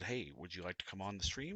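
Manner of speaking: ordinary delivery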